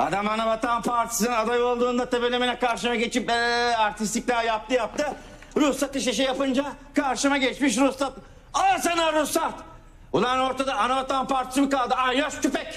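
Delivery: heated, angry rant, pitched very high. A mayor complains about a rival until someone tells him to calm down; angry. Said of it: "Sinirlenme başkan be".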